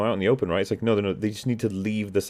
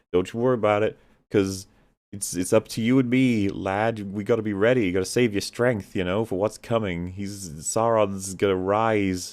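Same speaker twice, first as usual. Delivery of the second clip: plain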